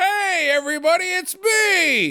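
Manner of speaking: put-on cheery, friendly, drawn-out, very high-pitched shout. Retelling a character entering a bar: imitating a friendly yell. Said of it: "he is just straight up yelling at them".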